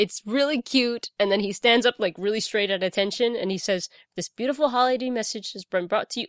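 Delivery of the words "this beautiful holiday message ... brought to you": wholehearted, earnest, sincere delivery. Retelling a holiday ad's closing line, imitating earnest delivery. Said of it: "Like he's so earnest".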